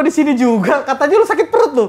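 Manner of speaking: high, loud, teasing scolding tone.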